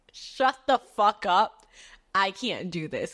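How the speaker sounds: put-on hysterical crying, sobbing. Retelling a phone call with Kai, reenacting hysterical crying. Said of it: "already hysterically crying".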